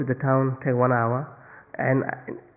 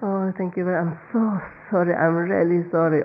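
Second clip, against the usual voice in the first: pretend-weepy, high, near-crying voice; 5 semitones higher than usual. Acting out someone making apologetic excuses on the phone: imitating an almost-crying apology. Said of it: "almost like you cry".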